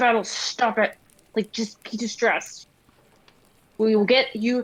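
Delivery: intense, urgent, hushed stage whisper. Voicing a character urging a friend to stop: intense stage whisper. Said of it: "very intense stage whisper".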